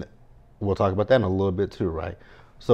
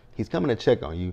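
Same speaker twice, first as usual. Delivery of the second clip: ordinary talk, nothing marked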